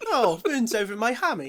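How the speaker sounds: put-on upper-class accent, airily delivered. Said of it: "we've given him a posh accent".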